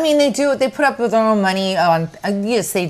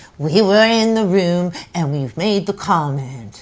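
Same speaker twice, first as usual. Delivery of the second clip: put-on New York accent. Imitating Gina saying her line about the comment: Gina impression. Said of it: "this is Gina".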